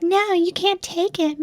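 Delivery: put-on very high, soft, whiny spoiled little boy voice. Retelling how a little boy objected: imitating a bratty little boy. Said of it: "perfect impression".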